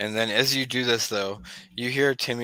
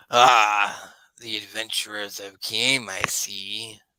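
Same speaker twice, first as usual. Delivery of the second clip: low, slow, menacing evil wizard voice. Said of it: "he's like".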